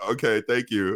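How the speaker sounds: put-on, mock-nervous man's voice. Retelling a delivery story, acting out the customer's reply, imitating a nervous man. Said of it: "like nervous".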